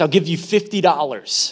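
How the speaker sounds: plain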